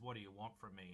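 normal talking voice

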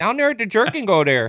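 clumsy fake Canadian accent. Repeating a line heard on a podcast, in a bad Canadian accent. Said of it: "That's a shit accent".

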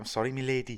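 put-on South African accent. Retelling what a man said: put-on South African accent. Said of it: "Is that meant to be a South African accent?".

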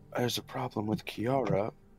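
very hushed, quiet, low half-whisper. As Zal, leaning over to Peach during the scene, then leaning back: half-whispering. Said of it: "just whisper".

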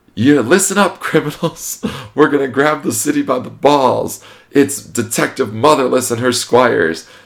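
very high-pitched, shrill yelling, like through a megaphone. Describing a woman on a speaker, the speaker acts out her words: retelling someone yelling. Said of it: "she's like yelling on the speaker".

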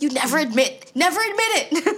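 high, fast, mocking doctor voice.

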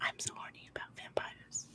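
soft, breathy, sweet, hushed whisper. Retelling a scene with Puddles: Lily's sweet succubus whisper. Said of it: "Lily's sweet little succubus voice whispering".

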